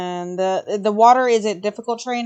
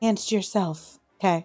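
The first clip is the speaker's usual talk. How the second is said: quiet, hushed whisper; 4 dB quieter than usual. Speaking in character to another character during the game: whispering. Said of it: "I'm gonna whisper to Lamp".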